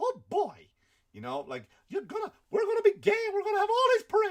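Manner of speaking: high cartoon mouse voice. Retelling a feud story as cartoon characters react, in a Mickey Mouse voice. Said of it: "And Mickey Mouse is like".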